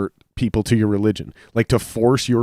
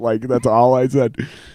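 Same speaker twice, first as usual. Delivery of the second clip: plain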